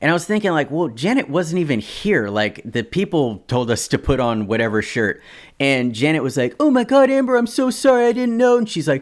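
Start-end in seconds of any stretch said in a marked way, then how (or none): 6.6-8.6 very high, near-tears voice, on the verge of crying. Retelling a tense moment with the models, speaker is imitating Janet near tears. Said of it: "Janet was like about to start crying".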